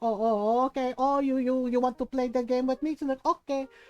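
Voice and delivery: put-on angry Filipino voice. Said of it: "when my mom gets that way".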